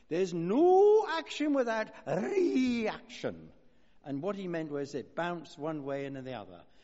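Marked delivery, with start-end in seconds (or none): 0.1-3.4 put-on broad Glaswegian Scottish accent, loud and high-pitched. Quoting a man's remark while talking about history, broad Glaswegian Scottish accent. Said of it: "in his broad Glaswegian Scottish accent".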